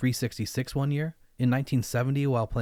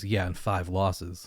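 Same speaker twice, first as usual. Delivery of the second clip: imitated under-breath mutter, much lower, slower; 5 semitones lower than usual. Recalling an interviewee's reply about his wins, retelling a mutter under breath. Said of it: "under his breath".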